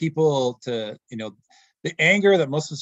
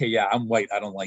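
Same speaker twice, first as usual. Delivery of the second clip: lower, put-on mutter under the breath; 5 semitones lower than usual. Retelling what a thirteen-year-old kid said about a guest: imitating muttering under breath. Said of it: "under his breath".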